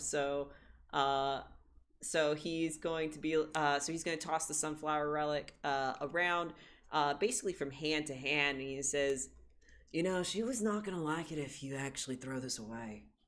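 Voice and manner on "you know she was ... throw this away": easygoing, laid-back surfer-dude character voice. A character tosses a relic from hand to hand and speaks, surfer voice. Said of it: "the surfer voice".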